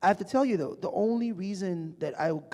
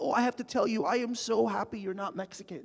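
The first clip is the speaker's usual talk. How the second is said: put-on laughing and crying; 3 semitones higher than usual. Speaker retells a woman who came up to them: imitating someone laughing and crying. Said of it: "she starts laughing and she's crying and she's like".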